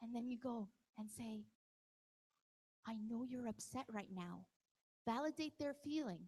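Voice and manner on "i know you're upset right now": calm, even, composed tone. Demonstrating what to say to someone who is upset, in a calm voice. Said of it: "in a calm voice".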